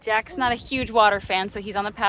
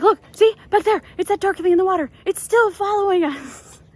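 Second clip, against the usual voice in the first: put-on high, loud, panicked yelling in a child's voice. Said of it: "he's like".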